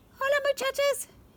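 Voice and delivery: pitched very high and tender. The Kitty Boy greets the muchachas after flying out of the closet, very soft voice. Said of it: "he said in a muy muy soft voice".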